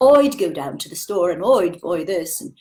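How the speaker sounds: Cockney accent with "I" pronounced as "oi". A speaker explaining vowel marks demonstrates an example sentence, put-on cockney accent. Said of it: "let's do Cockney".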